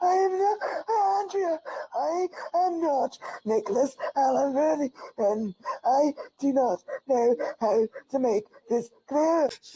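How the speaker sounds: fake crying. Asked by the interviewer about claims of his identity, he denies them: fake crying. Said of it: "crying crocodile tears that are clearly fake".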